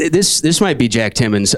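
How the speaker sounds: ordinary talk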